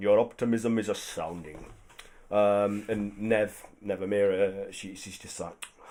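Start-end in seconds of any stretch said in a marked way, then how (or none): 0.0-1.6 words mumbled half aloud. Voicing a human man muttering about another's optimism: muttered line. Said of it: "he mutters".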